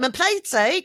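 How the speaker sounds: very high, loud, put-on East End London accent. Talking about British accents, a host tries one out: East End accent. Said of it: "You do an East End accent so much better".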